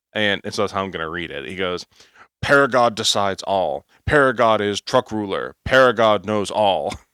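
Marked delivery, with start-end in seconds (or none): 2.4-6.9 Neanderthal caveman-style voice. Reading a commenter's remark aloud to the audience, in a Neanderthal caveman voice. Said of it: "I hear this in like a in like a like Neanderthal caveman style voice".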